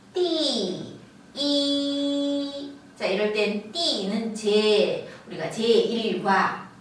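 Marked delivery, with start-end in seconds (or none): 0.2-2.7 yi in flat, high, level first tone. Teaching Chinese ordinals, saying yi in its original first tone. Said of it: "원래 원음 그대로 할 때 일성".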